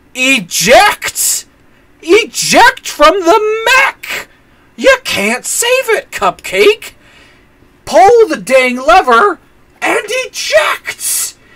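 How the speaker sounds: acted, very high, very slow, drawn-out yelling. Recounting watching a film scene, re-enacting yelling at a character on screen. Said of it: "the whole time I'm just yelling".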